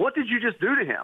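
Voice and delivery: acted, severe, stern, very high-pitched voice. Retelling how a woman in a dressing room questioned him: imitating a stern question. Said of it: "very sternly says".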